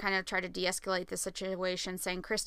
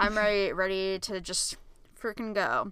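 usual speaking voice

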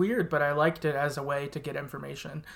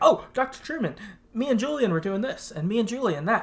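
put-on excited young boy voice, high, rapid, rattling nonstop; 6 semitones higher than usual. Describing a young boy met in the story: imitating Ezra, mile-a-minute. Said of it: "like a mile a minute".

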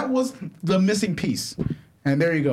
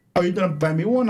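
plain

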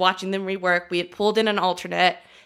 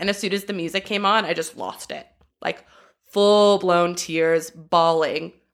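usual speaking voice

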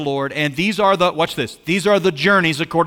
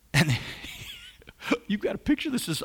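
laughing while speaking, higher and much quieter; 7 semitones higher, 10 dB quieter than usual. Teaching from a bible passage to listeners, laughing while speaking. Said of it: "I'm laughing because I shouldn't be laughing".

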